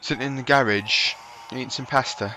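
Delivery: terrible, clumsy put-on British accent. Joking about how viewers from the uk say it: terrible uk accent. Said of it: "That was a terrible accent".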